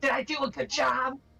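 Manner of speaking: giggling and laughing through the words. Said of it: "she's just giggling and then".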